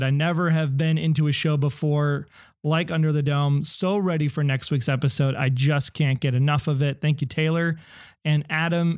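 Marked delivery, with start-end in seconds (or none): none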